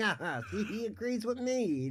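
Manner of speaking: super happy, thrilled, very high and slow. Retelling what a game character said after being agreed with: imitating a super happy Papyrus. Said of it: "He felt super happy about it".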